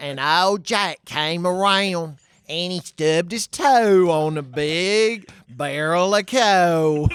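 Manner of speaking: put-on very slow, high, drawn-out tour-guide accent. Retelling what a tour guide said on a tour: imitating a tour guide's accent. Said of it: "a woman who had an accent where you're like, "Is this real?"".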